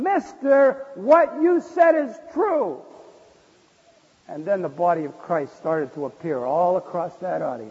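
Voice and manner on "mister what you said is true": very slow, very loud, high, drawn-out yell from full lungs. Retelling a man deep in the crowd answering: imitating a man yelling. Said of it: "yelled out at the top of his lungs".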